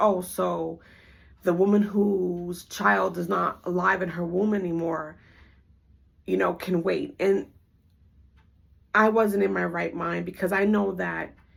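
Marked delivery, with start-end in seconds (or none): none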